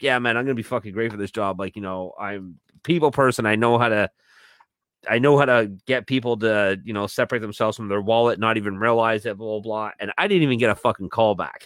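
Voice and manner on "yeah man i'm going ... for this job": acted eager, hyped-up gushing, fast, super excited. Retelling own voicemail after a job interview: imitating own past excitement. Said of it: "super excited".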